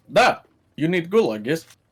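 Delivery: put-on Russian accent. Joking with the group about ending up in Russia, in a mock Russian accent. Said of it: "did we get to Russia?".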